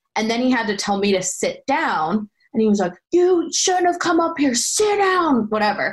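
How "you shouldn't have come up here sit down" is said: put-on yelling, higher. Retelling a scene where a fellow actor had to yell: imitating someone yelling. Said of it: "he had to yell at me in the scene".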